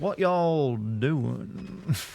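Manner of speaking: slow, drawn-out Southern drawl. Asking if more of a drawl is wanted, in a slow Southern drawl. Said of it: "should I speak with more of a drawl?".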